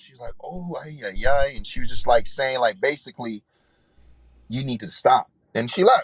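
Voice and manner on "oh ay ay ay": put-on very slow, strong Latin accent. Retelling a woman's reaction to hearing about his drinking: imitating a strong Latin accent. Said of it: "she had a strong Latin accent".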